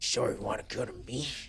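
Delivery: creepy, breathy whispered voice. Speaker trying out voices, doing a creepy voice. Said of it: "So I was just do a creepy voice".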